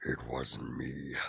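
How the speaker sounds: very low, rough, creaky voice. Quoting a viewer's line in a cartoon villain voice: Doctor Claw voice. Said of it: "it sounded like Doctor Claw from Inspector Gadget".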